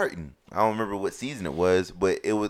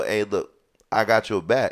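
plain

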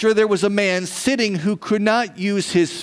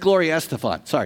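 ordinary delivery

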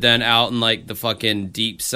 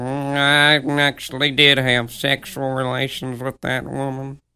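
put-on old-lady voice, higher-pitched; 3 semitones higher than usual.

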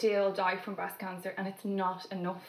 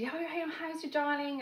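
the warmest voice, pitched up; 8 semitones higher than usual. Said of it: "she had the warmest voice".

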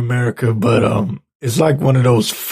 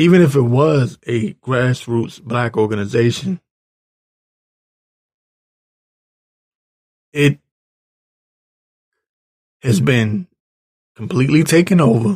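rough, raspy voice. Speaker resumes his point after excusing his voice: raspy voice. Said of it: "my voice is raspy right now".

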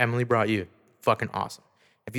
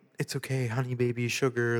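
mock affectionate loving voice, quieter; 5 dB quieter than usual. Retelling a client's words to the girl on his lap: imitating a loving tone. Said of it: "loving her".

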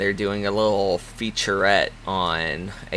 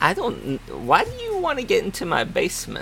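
put-on old woman voice, much higher pitch; 11 semitones higher than usual. As an old woman speaking to visitors who claim to be safety inspectors, old woman voice. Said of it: "You're telling me this old woman has a smartphone and knows how to use it".

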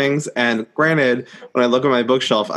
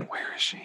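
whispered, impatient aside. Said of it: "Did we spend the first few chapters going".

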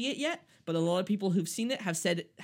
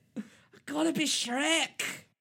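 put-on stoned voice, pitched higher; 9 semitones higher than usual. Retelling Mike Myers wanting to redo his lines: imitating Mike Myers sounding high. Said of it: "he was high off a fat bastard and was like".

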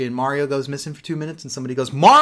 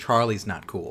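mock, bone-dry, low, quiet deadpan delivery; 5 semitones lower, 6 dB quieter than usual. Retelling what someone said while looking at the camera, retelling a deadpan line. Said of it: "He looked at the camera deadpan and says".

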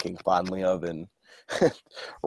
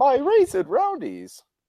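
put-on cartoon kid voice, pitched very high; 4 dB louder than usual. Retelling a scene and quoting a character in it; Martin impression. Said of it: "That was my attempt at a Martin impression".

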